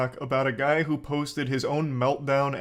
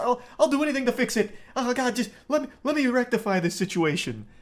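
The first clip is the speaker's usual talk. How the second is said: very high, fake, groveling pleading voice; 10 semitones higher than usual. Mocking how an employee would react to a lawsuit threat: mock groveling. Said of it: "Start groveling like".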